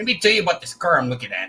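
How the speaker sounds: put-on strong Quebec French accent. Imitate a man who reviews cars and tells people what to buy, imitating a really sharp Quebecer accent. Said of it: "he always has that really sharp accent".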